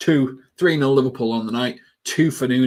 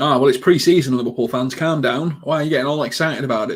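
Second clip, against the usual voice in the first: usual speaking voice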